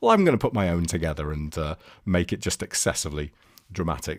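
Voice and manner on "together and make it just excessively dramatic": normal talking voice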